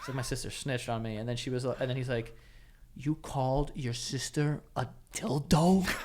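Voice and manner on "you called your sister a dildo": measured, slow, deliberate, drawn-out way of talking. Retelling the dad's question, imitating how he talks. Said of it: "This is how he talks".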